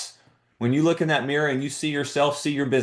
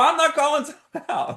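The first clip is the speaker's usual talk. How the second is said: put-on high-pitched shouting; 13 semitones higher than usual. Retelling an argument with the other coach mid-game, retelling yelling back. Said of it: "I start yelling back".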